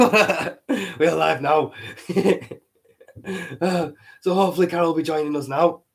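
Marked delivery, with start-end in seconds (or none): 1.0-1.7 words said through laughter. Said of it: "I'm having to say".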